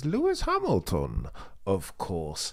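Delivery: low, swooping, pitch-swinging villain voice. Imitating how a politician said a line: Bane voice. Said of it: "she sounds like Bane from The Dark Knight Rises".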